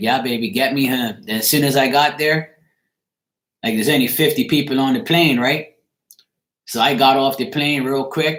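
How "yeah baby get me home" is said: usual speaking voice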